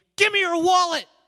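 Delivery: very high, very loud, piercing shriek. Retelling tackling a bike thief and demanding his wallet: retelling a scream. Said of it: "So I just screamed".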